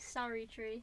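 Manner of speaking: attempted, unconvincing Australian accent. Trying out accents on a short phrase: attempted Australian accent. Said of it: "I cannot do Australian accents".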